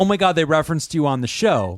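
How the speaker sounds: normal talking voice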